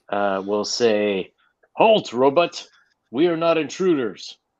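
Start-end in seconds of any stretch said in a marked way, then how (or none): 1.7-4.3 firm, commanding, authoritative, pitched-up voice. Voicing a character who orders a robot to halt: authoritative voice. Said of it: "putting on his best, um, authoritative voice".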